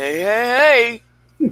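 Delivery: every "hey" stretched out long. Reading out a message from Finish, the speaker does a Yogi Bear voice. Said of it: "I always get Yogi Bear's voice in my head".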